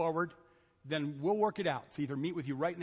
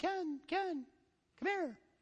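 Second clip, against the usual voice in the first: very high, tiny, faraway voices; 12 semitones higher, 3 dB quieter than usual. Recalling voices in a daydream calling the speaker's name, tiny faraway voice. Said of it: "far away little voices going".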